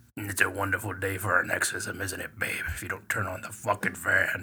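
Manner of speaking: put-on possessed demon voice. Speaker voicing the woman woken when the fan turns down, demonic voice. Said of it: "the demon in her".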